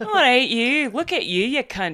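loud, fake, put-on Scottish accent. Recalling doing an accent at someone, put-on Scottish accent. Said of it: "I did do a Scottish accent at him".

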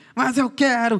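mock, high, screaming spoiled child's tantrum. Imagining a child in the middle of a mall, imitating a screaming child. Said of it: "E gritando no meio do shopping".

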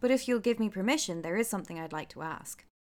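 ordinary delivery, nothing marked

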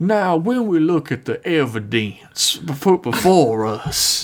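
put-on backwoods country accent. Imitating an actor's accent from a movie: Foghorn Leghorn accent. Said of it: "fucking foghorn leghorn accent".

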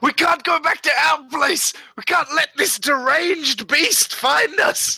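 high, in-character shout. Running across the quad from a deranged beast, a character is shouting out. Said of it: "I just shout out".

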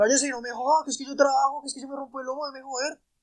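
high, whiny voice. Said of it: "le contestaba".

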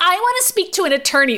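mock yelling, very high in pitch. Recapping a scene, acting out a character's demand, retelling a yell. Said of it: "and Reed starts yelling".

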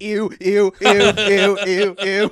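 high, loud, mocking grossed-out ew ew noises.

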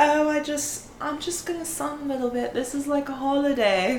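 put-on horrible English accent. Quoting what they said on holiday, in a horrible english accent. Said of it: "I'm aware of a horrible English accent".

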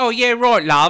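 put-on thick Cockney accent, very high and loud. Retelling how an actor talks once he is Mr. Hyde, in Mr. Hyde super Cockney voice. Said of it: "super Cockney".

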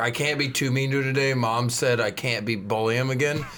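normal talking voice

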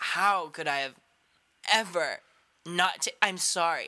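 slow, halting mock crying, breaking up mid-phrase. Imagining Yaya hearing the podcast episode and breaking down: imitating Yaya crying. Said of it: "She'll start crying and being like".

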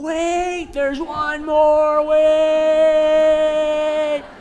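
long, slow, high yell. Retelling running to a closing gate after a flight, re-enacting a yell. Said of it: "I'm yelling".

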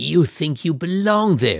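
spoken as a hiss. A man speaking to another person, hissed. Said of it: "he hissed".

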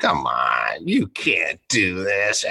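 put-on head-coach voice, slow, drawn-out, swooping pitch. Calling out a player after a bad play in a team meeting, Belichick voice. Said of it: "kind of in this Belichick voice".

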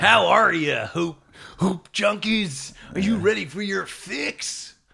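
forceful announcer delivery. Trying out a new podcast intro for the listeners: aggressive intro delivery. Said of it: "It's aggressive".

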